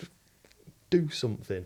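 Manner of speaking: usual speaking voice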